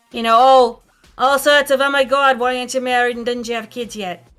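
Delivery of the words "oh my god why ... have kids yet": put-on New York accent. Showing off an accent picked up in New York, in a New York accent. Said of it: "I spent time in New York so I could try and talk".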